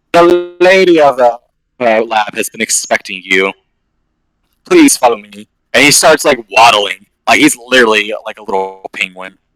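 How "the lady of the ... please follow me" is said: very proper, formal, well-mannered voice. Speaker recounts a man greeting them at a lab: imitating a proper voice. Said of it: "he has a very like proper voice".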